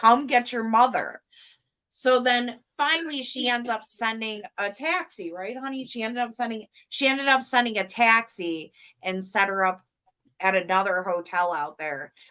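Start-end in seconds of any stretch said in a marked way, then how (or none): 0.0-1.2 mock mean harsh tone, higher. Retelling getting mean with a lady about her mother: mock-mean scolding. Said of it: "getting all like mean with this".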